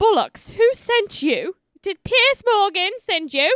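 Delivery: put-on snooty, posh British accent, pitched way up, loud. Acting out their reply to someone claiming to be the dad, uppity british person impression. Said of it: "It's my uppity British person impression".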